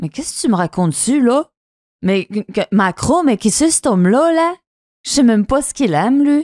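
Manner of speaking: poorly done Quebec French accent. In a sign-reading game, a player answers a quoted claim in a bad Quebec French accent. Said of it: "Je le fais très mal avec son québécois".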